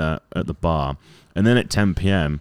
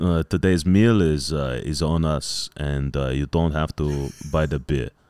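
put-on French man's accent, lower pitch; 4 semitones lower than usual. Retelling what a club president said at a sponsor bar: french accent. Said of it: "I won't do the accent".

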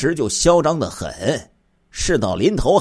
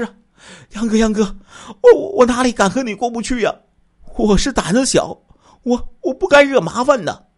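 nervous, stammering, flustered delivery; 9 semitones higher than usual. Li Dongdong, forced to kneel, answers Yang Wanchun's accusation in a hurried, stammering explanation. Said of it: "赶紧解释".

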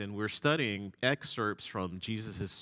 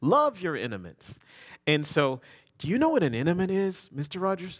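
put-on high, lisping four-year-old girl voice; 8 semitones higher, 6 dB louder than usual. Retelling a little girl explaining Sunday school to a man, four-year-old girl's lisp. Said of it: "four-year-old lisp".

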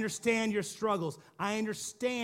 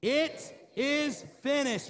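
proclaimed, pitched-up call-out; 5 semitones higher than usual. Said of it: "Let's try it again".

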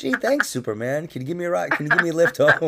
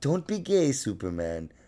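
fake, mock-caring motherly voice, much quieter; 6 dB quieter than usual. Speaker imagines being raised as a Superman baby; put-on caring mother voice. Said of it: "with my caring mother's voice".

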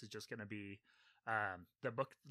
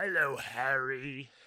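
booming, very loud big character voice; 2 semitones higher, 9 dB louder than usual. Showing how he voices a character, Hagrid voice. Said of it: "his voice for Hagrid is very good".

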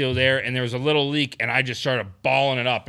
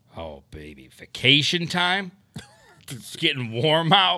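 swooping radio DJ announcer voice; 2 semitones higher than usual. Host riffing with a co-host, switching into a radio voice. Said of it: "I had to use my radio voice".

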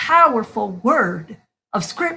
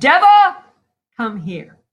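mock loud, booming roar; 5 dB louder than usual. Narrating the Holy One at the devil's doorstep calling the devil out, roaring. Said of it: "he just roared".

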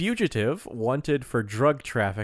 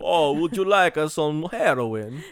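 mock vampire-style Italian accent; 4 semitones higher, 4 dB louder than usual. Joking with the other speaker, offering drugs: Italian vampire accent. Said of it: "I was an Italian vampire".

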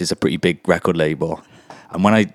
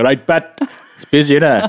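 casual, chatty put-on Welsh accent, raised and bright; 7 semitones higher, 5 dB louder than usual. Retelling what was said to a visiting Swede: Welsh accent. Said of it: "I just spoke to him in a Welsh one".

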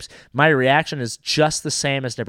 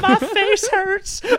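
very high, hurt, battered woman's voice; 3 dB louder than usual. Joking about a woman getting beaten up on stage; put-on voice of a beaten woman. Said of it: "That's the same voice that you use when you talk about the lady".

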